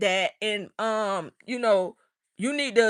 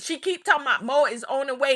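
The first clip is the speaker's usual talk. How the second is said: usual speaking voice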